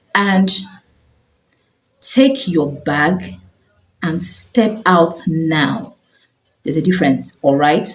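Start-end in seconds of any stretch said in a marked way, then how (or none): 0.1-5.9 serious, firm, very slow, deliberate delivery. Explaining to parents the difference from screaming, giving an instruction in a firm voice. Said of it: "one is giving the instruction with a firm voice".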